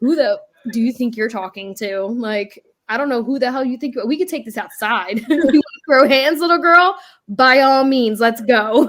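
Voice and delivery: loud, confrontational, ready-to-fight, squaring-up tone. Acting out a mock argument with a child: imitating herself squaring up. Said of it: "I might turn into a grown adult talking to her".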